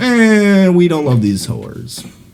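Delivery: slow, high, mock cocky dismissive tone. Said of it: "And I was like".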